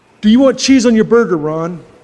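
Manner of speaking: normal talking voice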